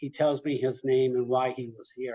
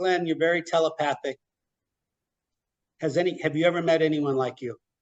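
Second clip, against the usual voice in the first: ordinary delivery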